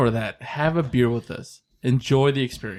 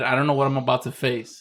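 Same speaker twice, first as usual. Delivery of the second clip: ordinary talk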